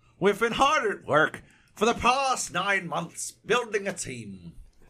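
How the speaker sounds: very high, sing-song, put-on Irish lilt. Reading a subscription email aloud: Irish accent. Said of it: "I should do it in an Irish accent".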